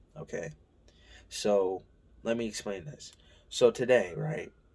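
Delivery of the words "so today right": voice breaking and cracking mid-phrase. Starting a story for viewers, the voice cracks mid-sentence: voice cracking. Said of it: "My voice cracked".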